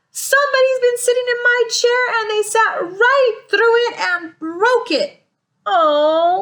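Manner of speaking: tiny high crying bear voice, oh drawn out. Reading a story aloud, the little wee bear finds his chair broken: crying in a little wee voice. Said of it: "cried the little wee bear in his little wee voice".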